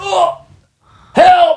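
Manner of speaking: play-acted, shrill yelling pitched very high. Retelling a fall through a hole: imitating own yelling for help.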